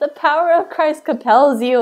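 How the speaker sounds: loud high-pitched yelling. Retelling a woman yelling at her howling dog, holding a cross: retelling a woman screaming. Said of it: "she was like screaming at it".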